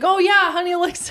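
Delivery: put-on high-pitched, excited voice. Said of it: "Sydney was like".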